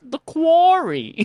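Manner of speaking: very high comedian's voice. Saying a phrase the way a TV character says it: Tracy Morgan voice. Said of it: "I say it in his voice".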